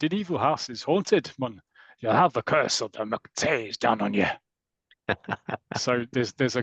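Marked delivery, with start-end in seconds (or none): 0.0-4.3 put-on Scottish accent. Retelling what another person said about the house, imitating a scottish accent. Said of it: "that's a Scottish accent".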